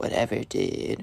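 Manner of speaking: mumbled under breath. Retelling how a spoiled kid answered a request not to interrupt class, mumbled under his breath. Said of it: "Mumbles under his breath".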